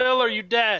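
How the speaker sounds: full-force yell, as loud as possible. Playing a character who calls out to a missing ally: yelling as loud as possible. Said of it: "I'm gonna yell loud as I can".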